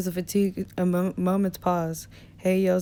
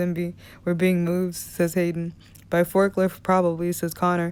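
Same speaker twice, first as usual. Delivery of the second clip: ordinary delivery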